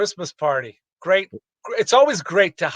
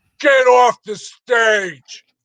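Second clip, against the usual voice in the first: put-on drunk heckling voice, higher and louder; 6 semitones higher, 5 dB louder than usual. Retelling a heckler yelling during a stage set: imitating a drunk heckler. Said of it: "this drunk guy, gets up and he's like".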